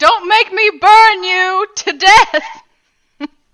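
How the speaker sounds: booming, very loud, very slow, drawn-out threatening yell. Repeating a threat for the game master: retelling a yelled threat. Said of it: "I was yelling".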